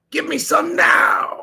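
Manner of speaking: rough, creaky, raspy cartoon villain voice. Speaker repeats a character voice to work out who it sounds like: Frieza-like villain voice. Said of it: "That's more like Frieza or something".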